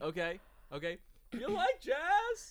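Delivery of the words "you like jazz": very high-pitched, comic, played for laughs. Acting out a movie scene with another speaker: Jerry Seinfeld impression. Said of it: "She probably heard my voice and was like".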